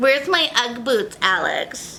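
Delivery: put-on high, slow valley girl voice.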